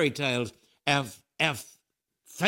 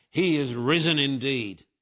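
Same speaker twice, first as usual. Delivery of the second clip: put-on, slow, thundering, booming crowd of voices. Retelling a crowd answering the Easter greeting: imitating a thundering crowd reply. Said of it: "the Russians thundered back".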